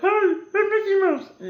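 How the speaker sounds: hey pitched way up with a swooping tune. Retelling how the little mouse character in a movie talks: Mickey Mouse voice. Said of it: "he talks like Mickey Mouse".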